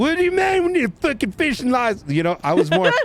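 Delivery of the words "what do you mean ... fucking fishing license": put-on shrill screech at very high pitch. Recalling screaming at Maeve, mock-screaming in Kekona voice. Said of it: "started screaming at Maeve, like in my Kekona voice".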